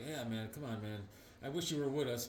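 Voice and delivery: very quiet, hushed, heartfelt, emotional pleading tone. Retelling a comic scene, the speaker acts out a character getting all emotional. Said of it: "Hyperion's all emotional".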